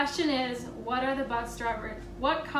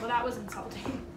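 plain

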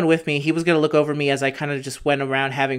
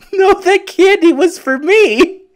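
mock very high, very loud, drawn-out tearful wail; 9 dB louder than usual. Retelling a childhood moment with his father, the speaker acts out his own tearful protest. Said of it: "with tears in my eyes".

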